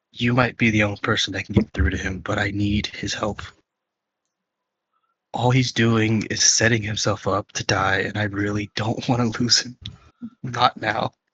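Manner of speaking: quiet breathy half-whisper. Voicing a character who pulls another aside: half-whispering.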